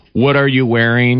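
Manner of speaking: ordinary talk, nothing marked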